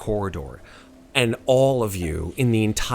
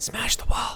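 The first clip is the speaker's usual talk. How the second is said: whispering voice, higher; 12 semitones higher, 4 dB quieter than usual. Voicing an axe that urges a player to smash the wall: whispering axe voice. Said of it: "The axe, of course, whispers to you".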